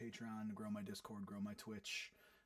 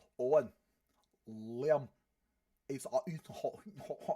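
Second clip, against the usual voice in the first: very loud, awful, fake Scottish accent; 4 semitones higher, 12 dB louder than usual. Retelling a day in character at a fair: imitating Bill's horrendous Scottish accent. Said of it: "Bill's, uh, Scottish accent is just, uh, the worst thing".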